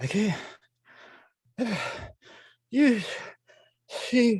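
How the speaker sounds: out-of-breath panting. Voicing a guard who ran up to the players: out-of-breath guard, huffing. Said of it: "he is just out of breath".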